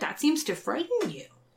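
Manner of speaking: put-on snotty tone. Retelling a conversation, quoting Kirk's reply in a mock-snotty Kirk voice. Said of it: "in a really snotty voice".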